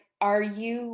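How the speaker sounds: ordinary delivery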